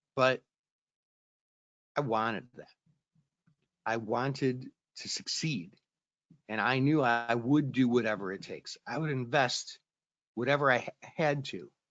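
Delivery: slow delivery, getting choked up with emotion. Speaker recounting a hard year of their own story, getting choked up. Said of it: "I'm kind of getting all choked up on this story".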